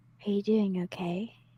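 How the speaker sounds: very hushed, said right under the breath. Voicing a character holding a creature's face and asking about it: very under her breath. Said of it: "very under, under her breath".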